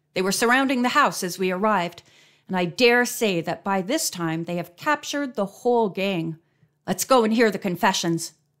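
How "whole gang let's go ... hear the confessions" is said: plain reading voice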